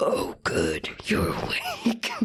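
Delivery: put-on voice sounding electronically distorted and modulated. Retelling someone about to jerk up in bed, Josh's modulated voice. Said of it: "in a modulated voice".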